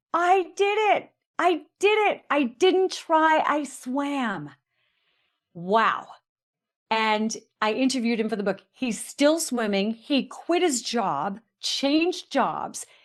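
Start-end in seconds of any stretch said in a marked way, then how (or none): 0.1-4.5 put-on high, slow screaming, each phrase spaced out. Telling a story, the speaker quotes a man shouting from across the park, imitating someone screaming. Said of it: "He's screaming".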